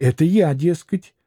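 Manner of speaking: ordinary delivery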